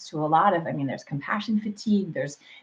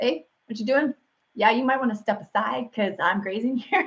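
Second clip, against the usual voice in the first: rabbit character voice; 4 semitones higher than usual. Joking about local rabbits, voicing a grazing rabbit. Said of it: "we have rabbits around here where they're like".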